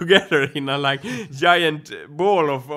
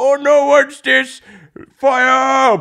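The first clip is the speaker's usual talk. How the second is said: raised toy soldier voice, fire drawn out; 8 semitones higher, 7 dB louder than usual. Describing a game of plastic soldiers and firecrackers: toy soldier voice. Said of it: "imagining the soldier's voice like".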